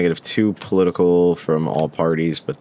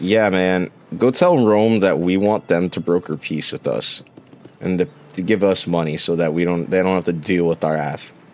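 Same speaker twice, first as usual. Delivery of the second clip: plain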